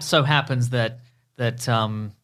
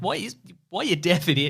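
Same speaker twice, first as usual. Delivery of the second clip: high, pitched-up, mocking, taunting tone; 6 semitones higher than usual. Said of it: "she's just gonna show up and be like".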